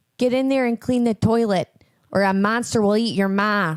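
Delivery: loud, put-on Chicago accent. Asked to voice a character's line again, speaker uses a Chicago accent. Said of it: "Say say in your Chicago accent again".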